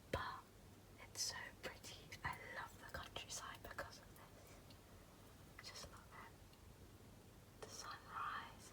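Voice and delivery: quiet, slow whispering. Filming the morning view while everyone's still asleep, whispering. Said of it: "I'm whispering because everyone's still asleep".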